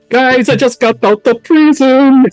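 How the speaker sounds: put-on shrill, very high, drunken screaming. Playing his character, really drunk in the tavern after prison: drunken screaming. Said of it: "I'm gonna start like screaming like".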